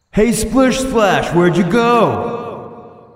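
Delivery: very high, loud, drawn-out shout carried outward. Voicing a character calling for a missing companion at night: yelling out loudly. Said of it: "he's gonna yell out".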